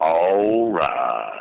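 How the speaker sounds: very low, deep bass voice with swoops. Asked to do it again for the others: very low voice. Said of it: "That's not as low as you go".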